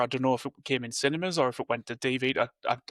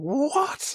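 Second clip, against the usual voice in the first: play-acted, very high, stunned, shocked yelp; 12 semitones higher than usual. Retelling watching a shocking finale episode: imitating own past shout. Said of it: "I remember shouting".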